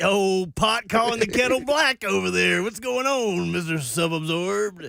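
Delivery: gotcha voice, caught-you tone. Teasing a co-host for hypocrisy in an "oh look what we have here" voice. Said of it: "whose voice is that?".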